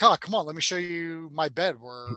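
mock charming, flirtatious voice. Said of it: "switches the charm on".

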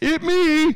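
very high, loud, barked-out blurt. Reading a letter aloud, quoting a voice in the writer's mind: John Fetterman voice. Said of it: "in its best John Fetterman voice".

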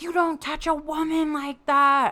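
high, hoarse, raw shouting voice. Retelling confronting a man who choked a friend: retelling own yell. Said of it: "I just started yelling".

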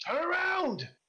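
very high, loud goblin voice shouting. Voicing a goblin ordering his mount: goblin yelling at his mount. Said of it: "he's yelling at his mount".

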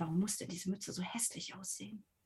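very quiet half-whispered mutter under the breath. A role-player's character speaks an aside, half-whispering to oneself. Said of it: "ich flüstere so vor mich hin".

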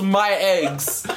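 put-on yell. Retelling a character's line from a super serious scene: imitating Melville yelling. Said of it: "and he just yells".

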